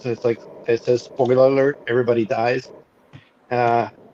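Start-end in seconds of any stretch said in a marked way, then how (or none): none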